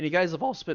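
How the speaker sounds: voice breaking and cracking partway through. Speaker describing the falling snow to the group, voice cracking. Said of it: "that was a voice crack".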